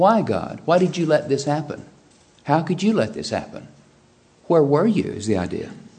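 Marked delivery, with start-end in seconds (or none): 0.0-5.0 mock pointed, accusing, demanding tone. Reading out a man's written questions to god: mock-accusatory tone. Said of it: "That's an accusatory tone".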